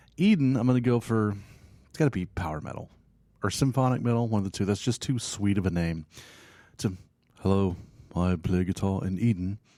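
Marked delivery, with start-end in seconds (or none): 7.4-9.6 slow, romantic-sounding voice in a British accent. Joking about a band called eden, imitating its guitarist introducing himself, british accent. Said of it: "You got to have a British accent for there".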